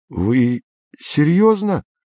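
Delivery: small crack, voice cracking and breaking. Andrei answers an old man speaking of the eternal underworld: voice cracking slightly. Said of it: "голос Андрея дал маленького петуха".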